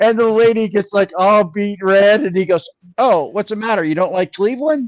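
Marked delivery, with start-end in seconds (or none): 3.0-4.9 kinda goofy comedian's delivery. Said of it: "he talked kinda goofy".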